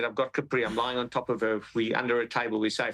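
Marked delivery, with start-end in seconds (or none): none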